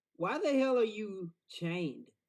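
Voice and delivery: very loud, high-pitched shout, projected far. Calling out to a distant chained figure in character: yelling out loud. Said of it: "can I yell something?".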